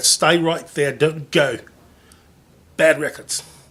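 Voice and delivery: angry, scolding British accent. Host scolding records that keep falling over, angry British accent. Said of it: "I get the British accent".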